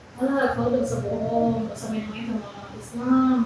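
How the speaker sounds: plain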